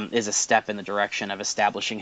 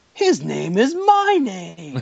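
very high, very slow, swooping, every word stretched out; 10 semitones higher, 4 dB louder than usual. Retelling a scene where a cartoon character stares at the TV: Homer Simpson voice. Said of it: "And Homer just looks at the T V and he goes".

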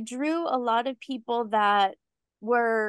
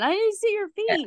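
put-on shrill, very high yell; 9 semitones higher than usual. Retelling a guy yelling at the speaker after a scare: retelling a guy yelling. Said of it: "this guy was like yelling at me".

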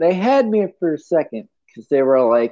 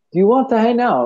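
put-on British accent, pitched up; 6 semitones higher than usual. Trying out an accent after being asked to do one on the podcast, british accent. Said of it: "Say hang out in a British accent".

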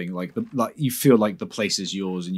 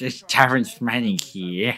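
put-on annoying voice, pitched higher; 3 semitones higher than usual. Joining in mocking an actor's voice: imitating Taron Manning's annoying voice. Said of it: "she has a really annoying voice that's like".

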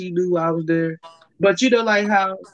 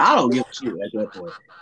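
usual speaking voice

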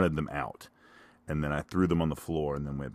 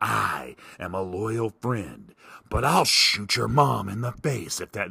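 put-on husky narrator voiceover voice, higher; 6 semitones higher than usual. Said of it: "it's the husky guy's voice".

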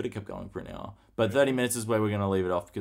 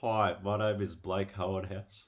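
slow, deliberate, measured, drawn-out speech; 4 dB quieter than usual. After offering to imitate Blake to his face, introduce yourself in an impression of Blake. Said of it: "That's my impression of Blake".

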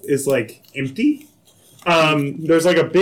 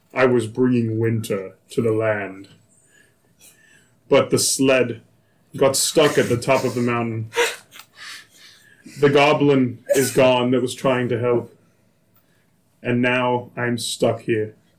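deep, low, dropped-register voice; 3 semitones lower than usual. Telling a story, voicing the voice heard from the small dog, in a deep voice. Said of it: "you hear just this deep voice that goes".

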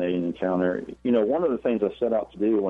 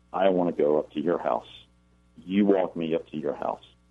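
mock very cold, flat, unvarying monotone; 3 semitones lower than usual. Telling a story, voicing a strange boy answering Harold: retelling a cold monotone. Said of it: "says in this very cold, monotone voice".

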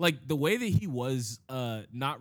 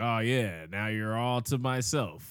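put-on creepy voice; 3 semitones lower than usual. Retelling what a creepy taxi driver said: imitating a creepy voice. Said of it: "he had that real creepy vibe".

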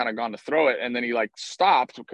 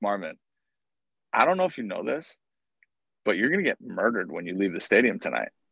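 softest, quietest hushed delivery; 4 semitones lower than usual. Retelling what was said to the umpire marvin during a fight: retelling own soft-spoken words. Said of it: "just in the softest".

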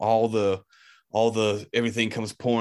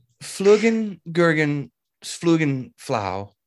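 put-on Swedish accent with raised pitch; 6 semitones higher, 3 dB louder than usual. Retelling a scene where Chicklet is upset, Lars's Swedish accent. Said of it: "He just says it in his Swedish accent".

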